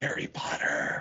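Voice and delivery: whispered emphasis. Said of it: "you don't whisper for inflection".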